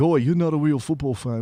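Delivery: put-on English bloke accent. Imagining an English bloke telling the other speaker off: imitating an English bloke. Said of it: "some English bloke is like".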